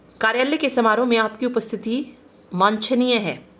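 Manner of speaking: normal talking voice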